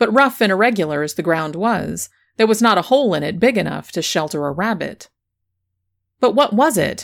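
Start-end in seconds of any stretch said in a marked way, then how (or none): 6.2-7.1 impatient, pressing, pitched-up voice. First-person narrator questions the limping schoolmaster, impatient. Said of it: "I said impatiently".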